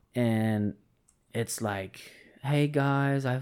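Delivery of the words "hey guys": put-on Australian accent. Retelling a podcast guest's greeting: imitating an australian accent. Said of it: "and he has an Australian accent".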